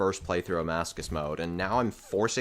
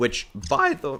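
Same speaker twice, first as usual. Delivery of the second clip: high squeaky voice cracking mid-phrase; 6 semitones higher, 4 dB louder than usual. Explaining card drop odds, the speaker's voice cracks: voice cracking. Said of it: "that voice crack was".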